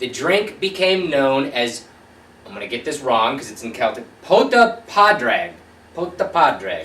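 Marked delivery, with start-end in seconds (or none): 4.2-6.8 put-on swooping Italian accent, drawn out. Pronouncing the Celtic name of the drink, in an Italian accent. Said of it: "I said that in an Italian accent for some odd reason".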